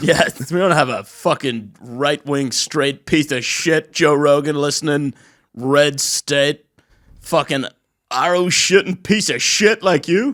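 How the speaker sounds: loud, feigned, emotional outburst. Acting out what someone's parents said, in a put-on emotional outburst. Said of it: "I got really emotional there".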